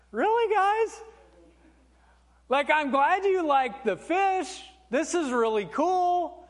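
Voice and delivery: put-on amused laughing voice.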